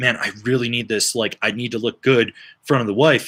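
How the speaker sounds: put-on whisper. Retelling what the dad said to the speaker: imitating a whisper. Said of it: "he whispers to me again".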